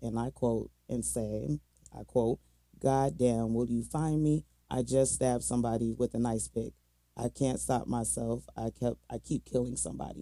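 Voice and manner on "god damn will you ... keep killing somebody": ordinary talk, nothing marked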